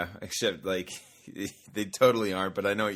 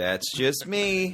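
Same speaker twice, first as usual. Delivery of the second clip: smug, douchey delivery lilting up at the end; 6 semitones higher than usual. Showing how a new catchphrase gets said, the speaker says it douchey. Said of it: "you say it kind of like douchey like that".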